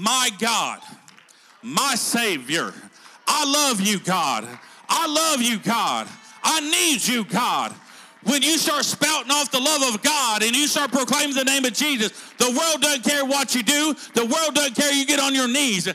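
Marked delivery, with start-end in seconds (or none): 0.0-7.7 very slow, swooping, prayerful crying out. Retelling a kneeling man's prayer, acting out a loud cry. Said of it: "he cried with a loud voice".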